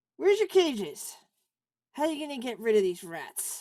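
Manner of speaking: gruff, professorial character voice. Voicing the professor looking over a player's clues: gruff professor voice. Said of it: "his speech, which is gruff".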